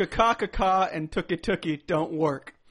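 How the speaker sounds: loud, slow, deliberate delivery. Quoting a movie line: Orlando Jones impression. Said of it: "That's Orlando Jones from Evolution".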